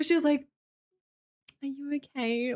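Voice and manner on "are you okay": deeply concerned, worried, caring voice. Retelling the ice cream server asking again: imitating a really concerned question. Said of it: "really, really, really concerned".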